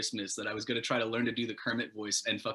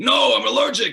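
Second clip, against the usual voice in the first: shrieking demon voice, very high and very loud; 13 semitones higher, 14 dB louder than usual. Retelling her reply when offered a hot Cheeto: demon voice. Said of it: "like a demon voice".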